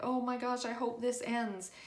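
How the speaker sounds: usual speaking voice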